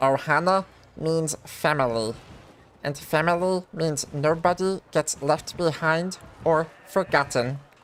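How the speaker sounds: cartoon creature voice. Showing chat a Stitch impression: Stitch impression. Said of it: "I can do a pretty solid Stitch impression".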